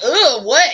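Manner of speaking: irritated woman's voice, high, loud and annoyed. Acting out how a woman might brush someone off: imitating an annoyed woman. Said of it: "And then she like".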